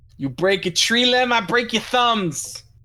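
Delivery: put-on thick Jersey accent elf voice. Playing an elf replying to a nature-walk suggestion, elf with a jersey accent. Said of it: "a fucking elf with a Jersey accent".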